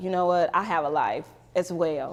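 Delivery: normal talking voice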